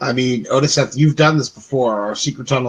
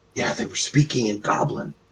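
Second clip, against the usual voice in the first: hushed, barely audible whisper under the breath; 8 dB quieter than usual. Warning the others in a tunnel, whispering. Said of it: "I will whisper the message".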